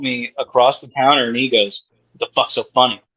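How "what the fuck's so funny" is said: mock aggressive, confrontational male voice. Retelling what a man at the counter said after the speaker laughed, mimicking a hostile challenge. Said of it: "Like he was waiting all day".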